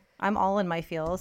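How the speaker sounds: ordinary talk, nothing marked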